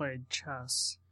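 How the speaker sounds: very soft-spoken. Asked what they did in Scouts today, a speaker answers very softly. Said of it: "he said very softly away from the mic".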